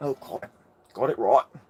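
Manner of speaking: put-on mock English accent. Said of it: "Isn't that how English people talk?".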